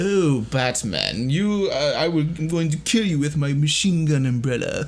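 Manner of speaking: slow, sophisticated villain voice, drawn-out opening. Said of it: "Penguin's a lot more sophisticated".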